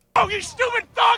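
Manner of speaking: loud screaming. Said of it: "screaming at".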